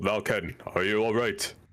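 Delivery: yelling, shouting in character. Voicing a character calling out to an ally after a fight: yelling in character.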